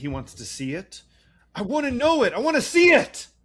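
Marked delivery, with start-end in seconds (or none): 1.5-3.2 screeching, shrill yell at full volume. Retelling a character demanding to see something: imitating someone yelling. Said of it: "calm down".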